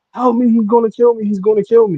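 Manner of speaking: frantic, desperate, high, panicked scream. Speaker retelling what the cops heard from outside, imitating the girl screaming for help. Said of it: "they hear her screaming from outside".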